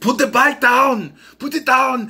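loud, blunt barking voice. Imagining a remake with this actor in the lead: Arnold Schwarzenegger impression. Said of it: "Arnold Schwarzenegger in there".

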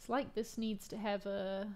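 normal talking voice

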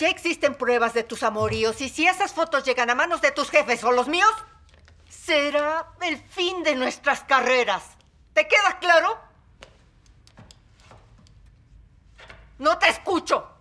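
loud angry high-pitched shout. A drama scene: confronting a partner about their infidelities, yelling. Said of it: "No me grites".

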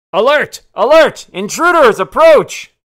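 shrill, blaring, very high, very loud alarm yell. A staircase molds itself into a mouth and warns of intruders, yelling in Dwarvish. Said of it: "mold itself almost into like a mouth and yells in Dwarvish".

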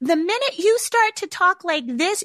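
sugary, gushing, cloying, very high-pitched voice. Explaining to parents what not to do with praise, cloying high-pitched voice. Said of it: "cloying and high pitch".

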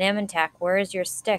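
ordinary delivery

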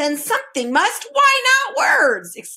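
high, triumphant exclamation. The Undersecretary answers Milo's remark about money, exclaiming triumphantly. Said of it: "exclaimed the Undersecretary triumphantly".

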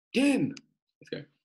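very high-pitched put-on Scottish accent. Hosting a timed round, the speaker calls the next go: scottish accent. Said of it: "That's my Scottish accent".

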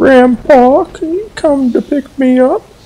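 very high-pitched voice. Playing a game, the speaker repeats a character's voice line in a really high-pitched voice. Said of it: "in a really high-pitched voice".

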